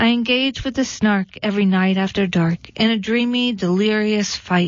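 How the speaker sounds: ordinary delivery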